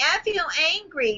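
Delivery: weak, feeble, soft, high whiny tone. An exercise in voicing anger, shown done badly: weak, whiny tone. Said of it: "That's not angry. That's whiny".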